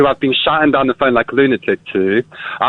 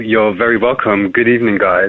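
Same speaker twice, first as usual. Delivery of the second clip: mock creepy tone, lower; 4 semitones lower than usual. Greeting the radio hosts at the start of a phone call: put-on creepy voice. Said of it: "That's a bit creepy".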